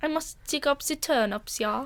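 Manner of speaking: bad fake German accent, soft and high. Joking about looking like a little German boy, playing him, bad fake German accent. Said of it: "My German accent's really... It's not there".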